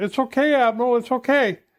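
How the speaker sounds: mock high-pitched yell. Retelling how the petty officer yelled back to the admiral: imitating a petty officer yelling. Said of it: "the petty officer is yelling".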